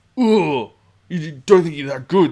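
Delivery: very loud, high, aggressive, in-your-face goading tone. Retelling how a huge dice-game opponent got in your face: imitating an aggressive in-your-face taunt. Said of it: "he would get physically in your face".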